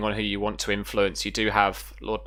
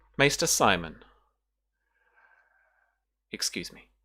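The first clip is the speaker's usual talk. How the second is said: laid-on, velvety smooth voice. A game master voices a lady interrupting a maester, velvety Lady Zasmera voice. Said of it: "the velvety voice that you recognize".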